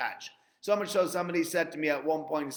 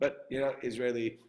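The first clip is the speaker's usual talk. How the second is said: ordinary delivery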